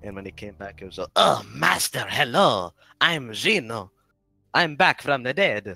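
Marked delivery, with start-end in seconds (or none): 1.2-5.8 put-on terrible Italian accent, loud, slow and booming. Recalling playing Gino returning from the dead in a show, Gino, terrible Italian accent. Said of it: "I did a terrible Italian accent".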